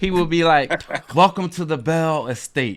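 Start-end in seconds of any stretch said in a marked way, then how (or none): 1.1-2.8 theatrical, grand, dramatic host voice. Retelling how a host greeted guests at his home: imitating Jerome's dramatic greeting. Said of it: "So dramatic".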